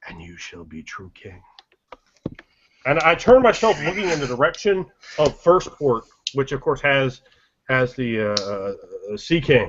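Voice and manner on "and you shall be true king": very quiet, low, hushed, secretive half-whisper. Speaking in character, leaning close to someone, half-whispering. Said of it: "I lean in close to him and I whisper".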